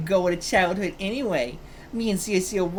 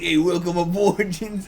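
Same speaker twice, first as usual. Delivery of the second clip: put-on elderly British gentleman voice; 3 dB louder than usual. Unable to do a British baby voice, offering an old British man voice instead. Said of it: "I can only do it as like an old man".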